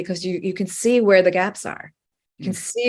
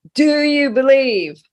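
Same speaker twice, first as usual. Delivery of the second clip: mock great booming voice from the sky, pitched up; 7 semitones higher, 5 dB louder than usual. Telling a joke, as the voice from the sky answering a man on a branch, bellowing. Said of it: "this voice bellows down".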